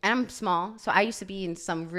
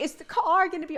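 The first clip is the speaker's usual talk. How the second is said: high, tearful, weepy crying voice; 10 semitones higher, 4 dB louder than usual. Retelling her car accident, speaker acts out her past self, imitating her own crying. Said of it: "literally crying".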